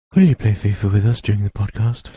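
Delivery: plain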